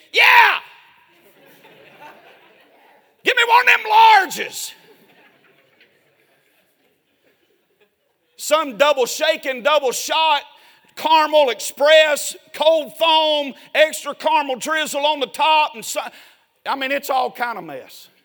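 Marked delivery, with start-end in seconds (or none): 0.2-15.8 loud, exaggerated country accent laid on thick. Ordering a coffee at the counter, in an exaggerated redneck voice. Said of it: "I pull up into my redneck voice".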